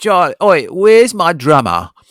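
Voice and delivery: loud calling-out voice. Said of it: "I'm gonna do my [name] impression now".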